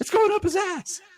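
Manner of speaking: shrieking scream, very loud and very high. Retelling a moment watching a child try on a costume: retelling a scream. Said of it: "I just start screaming".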